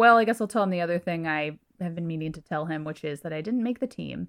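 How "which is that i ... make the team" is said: normal talking voice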